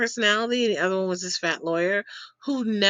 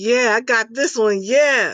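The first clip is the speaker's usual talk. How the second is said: put-on excited voice, louder; 7 dB louder than usual. Retelling what an eager massage client said: imitating someone excited. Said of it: "He was so excited".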